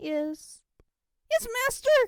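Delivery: shrill, very loud fearful shriek, cracking on master. The narrator answers as the whip is raised again, shrill voice breaking with fear. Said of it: "My shrill voice pitched out and broke on the word master, out of sheer fear".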